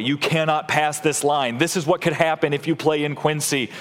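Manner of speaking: ordinary talk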